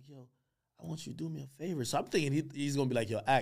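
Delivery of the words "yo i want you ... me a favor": put-on very quiet, calm, hushed Louisiana accent. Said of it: "this very, like, calm voice, but it's so Louisiana".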